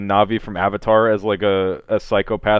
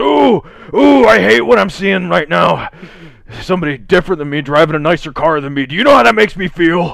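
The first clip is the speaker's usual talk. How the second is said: put-on menacing cop voice, higher and louder; 9 semitones higher, 8 dB louder than usual. Imitating a highway patrolman who pulls a driver over: imitating a menacing highway patrolman. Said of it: "That guy pulls you over and he goes".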